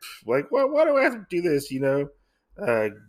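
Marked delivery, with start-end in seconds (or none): 0.0-1.7 very high, put-upon, scoffing grumble. Retelling how the innkeeper reacts to being left a task: imitating a scoff. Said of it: "the innkeeper kinda scoffs at them".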